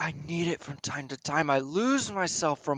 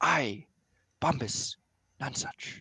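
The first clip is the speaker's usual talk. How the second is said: low hushed whisper, much quieter and slower; 4 dB quieter than usual. After hearing a disturbance, a player's character calls to a companion in a low whisper. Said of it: "in a h- low whisper".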